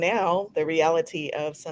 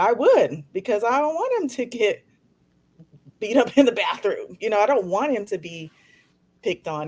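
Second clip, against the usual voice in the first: choked-up, breaking voice catching with emotion; 4 semitones higher than usual. A parent talking about a child's diagnosis and being picked on, getting choked up. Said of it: "Now I'm getting choked up".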